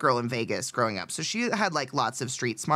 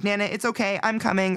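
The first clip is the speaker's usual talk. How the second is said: high-pitched, put-on phone-call voice; 5 semitones higher, 3 dB louder than usual. Retelling pretending the grandmother called to escape a hangout: retelling a fake phone call. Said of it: "pretended my Nana called me and just sat there and was like".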